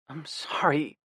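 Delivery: soft, hushed whisper, barely above breath. Reading a novel aloud, a character apologizing to a brother: whispered. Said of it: "I whispered".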